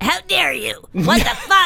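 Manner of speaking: high, affronted, outraged, indignant cat voice. Speaker demonstrates the voices of their cats: Serafina the cat's mock-indignant voice. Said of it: "Serafina's voice is".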